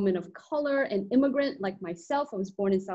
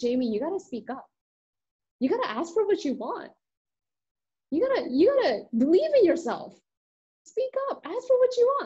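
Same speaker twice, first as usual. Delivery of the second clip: thick put-on Korean accent, pitched up; 6 semitones higher than usual. Retelling what mom told a latchkey kid, imitating mom's Korean accent. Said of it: "her Korean mother's thick Korean accent".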